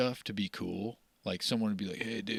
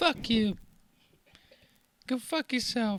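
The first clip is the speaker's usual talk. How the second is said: put-on voice with speech impediment, higher and louder; 14 semitones higher, 5 dB louder than usual. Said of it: "a [name] with a speech impediment".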